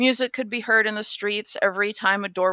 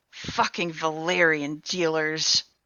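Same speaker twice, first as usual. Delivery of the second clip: low, spiteful, very nasty venom-laced tone; 4 semitones lower than usual. The player's character walks past and hears a woman speak, in a very nasty tone. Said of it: "you hear her say in a very nasty tone".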